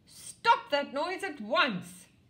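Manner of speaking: very loud, high, furious shout. Interrupted while practising music, confronting the noisy neighbour next door, furious. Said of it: "said Crocodile furiously".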